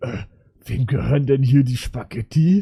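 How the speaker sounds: really nasty, gross, disgusting-sounding voice. Retelling what a mother asked about the spaghetti: imitating a really gross tone. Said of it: "so richtig widerlich gesagt".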